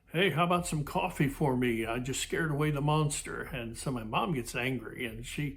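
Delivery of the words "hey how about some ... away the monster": play-acted teasing, sarcastic, mocking wisecrack. Retelling how the father chimed in, mimicking sarcastic dad. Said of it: "he's kind of being sarcastic".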